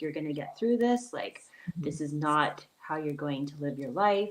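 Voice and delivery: put-on practical, firm, no-nonsense tone. Retelling mom's words of support: imitating mom, practical and firm. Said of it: "she was very practical with me".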